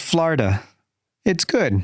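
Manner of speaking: simple, broken English phrasing. Retelling how mom suddenly spoke English by the fire: imitating broken English. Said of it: "breaking out in broken English".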